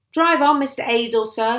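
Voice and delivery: authoritative commanding shout. A police sergeant shouts through the car window to the driver, commanding policeman's voice. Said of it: "in his most commanding policeman's voice".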